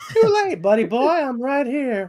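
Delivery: mouse-like cartoon character voice. Answering someone who swore never to come near, the character sounds like Mickey Mouse. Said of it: "why did that sound kind of like Mickey Mouse".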